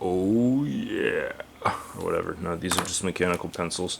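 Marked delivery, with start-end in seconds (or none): 0.0-1.3 deep voiceover voice, quieter. Showing mechanical pencils on camera, doing a Twix commercial voiceover voice. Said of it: "That really deep voice".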